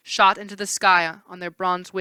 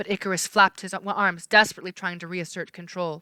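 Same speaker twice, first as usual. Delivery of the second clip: ordinary delivery, nothing marked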